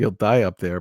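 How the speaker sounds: ordinary delivery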